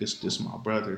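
ordinary talk

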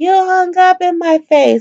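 very high, shrill, stretched-out shouting. Retelling a woman at an event yelling at her partner; retelling a woman yelling. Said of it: "she was yelling".

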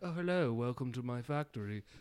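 put-on soft, low-key, underplayed British accent. Describing a scene where the business owner comes up, undertone british accent. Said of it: "he's got like a very undertone British accent".

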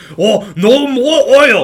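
very high, very loud, very slow, shrill derisive outcry. Mocking a politician's stance on oil: mocking Bernie Sanders impression. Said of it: "crazy socialist loon Bernie Sanders just says".

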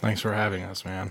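said without enthusiasm, unenthused. Guest thanking the host at the start of a show, unenthusiastic. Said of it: "you sound so enthused".

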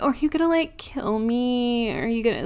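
high, silly, teasing, flirty pretend fright. Retelling a horror scene, imitating Tatum's silly flirty fake fear. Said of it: "doing her whole, like, silly Tatum thing".

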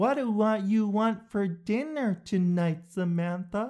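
put-on very high, slow, sing-song baby-talk voice. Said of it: "that kid voice that some people use".

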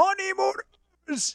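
mock screamed word. Retelling how a game show host pointed at his wife and screamed, imitating a scream. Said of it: "and screamed".

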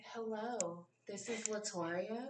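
soft, sultry, very slow, drawn-out voice. Showing how your co-host always introduces herself, doing a sultry Latoria impression. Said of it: "the sultry sounds of Latoria".

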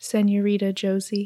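hushed, soft voice. Retelling an amazing moment where she speaks up, saying it quietly. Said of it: "She just quietly goes".

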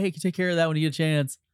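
put-on passive-aggressive tone. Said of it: "You're an asshole".

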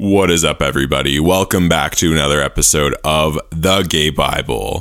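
deep, put-on, fake show-intro announcer voice. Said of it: "start talking in my straight voice again".

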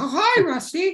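squeaked out, high and loud. Describing a podcast game, speaker is turned into a mouse and greets Rusty, Mickey Mouse voice. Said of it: "you will talk like a mouse".

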